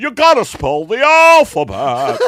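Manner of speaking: very loud, high yell, done badly. Playing a sex therapist yelling out the window, do a terrible Jimmy Stewart impression, yelling. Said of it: "I'm doing a terrible Jimmy Stewart".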